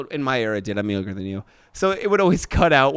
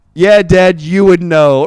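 sudden, cheeky, called-out yell; 4 semitones higher, 12 dB louder than usual. Retelling a comeback to dad in front of family: retelling own yell. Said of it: "I just yell out".

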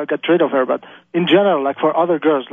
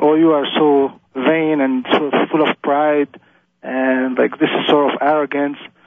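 usual speaking voice

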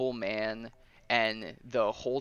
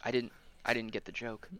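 mock-meek, much quieter, timid voice; 4 dB quieter than usual. Retelling a show scene where the animator answers, imitating a meek reply. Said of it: "he goes like very, very meekly".

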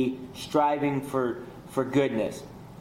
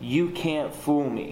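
put-on demonic voice, slower. Retelling a voice heard while lying sick on the ground: satanic voice. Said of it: "In like a satanic voice".

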